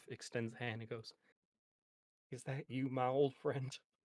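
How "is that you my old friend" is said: shaky, trembling, wavering, tremulous voice. Speaker voicing a character extending a hand to a donkey, shaky voice. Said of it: "shaky voice".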